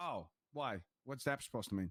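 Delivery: put-out, offended, upset tone. Reacting to hearing that the man is not her type: sounding upset. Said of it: "Why do you sound upset about that?".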